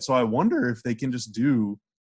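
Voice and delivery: voice breaking. A speaker musing aloud about the playoff schedule, voice cracking. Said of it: "as my voice cracks".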